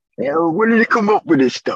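clumsy, bad, put-on Brooklyn accent. Talking about giving a character a brooklyn accent, in a horrible brooklyn accent. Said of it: "That's my horrible Brooklyn accent".

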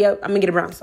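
relaxed, careless voice. Retelling own past words about getting a brownstone: imitating own careless tone. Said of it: "how careless I said it".

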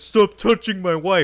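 very loud, high, shrill yell. Retelling a movie scene where a man in a band points into the crowd: imitating a shout. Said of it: "just shouts".

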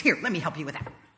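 tone of someone out of patience. Describing someone offering unwanted help, imitating them in a mock-impatient voice. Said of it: "saying in an impatient voice".

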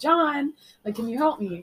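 ordinary delivery

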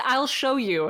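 put-on Swedish-accented speech. Retelling how a girl answered the group, in a swedish accent. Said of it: "like, Swedish accent and says".

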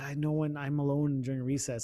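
put-on shy whisper. Retelling a girl's confession about recess: imitating a shy whisper. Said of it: "she whispered it to me, man".

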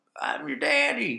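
country bumpkin voice. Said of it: "I'm doing, like, the hillbilly".

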